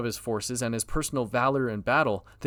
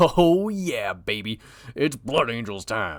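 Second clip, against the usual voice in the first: sudden southern sheriff voice with drawl; 4 dB louder than usual. Announcing the next entry on a list: sudden southern sheriff voice. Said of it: "I turned into a southern sheriff".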